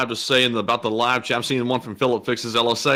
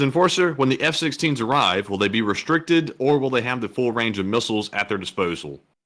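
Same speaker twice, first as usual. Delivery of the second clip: normal talking voice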